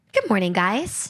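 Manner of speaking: tight, bright, upbeat morning-radio DJ voice. Asked for their morning radio voice, bright morning radio voice. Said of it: "Give us your morning radio voice".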